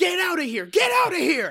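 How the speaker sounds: loud, high panicked yell. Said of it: "It was like".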